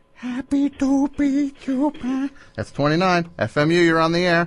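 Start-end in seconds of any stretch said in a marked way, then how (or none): 0.2-2.3 high, very slow comic voice, every word stretched. Doing a requested impression for a caller: Adam Sandler voice. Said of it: "Adam Sandler for us?".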